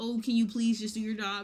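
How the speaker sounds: put-on polite tone. Showing how a request changes with frustration: imitating a nice request. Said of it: "the nice".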